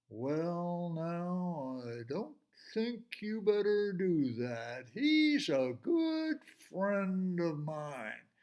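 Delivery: unhurried, easygoing, slow, stretched-out speech. Reading a story, Charlie answers a little mountain lion in his slow voice. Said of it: "in his slow voice".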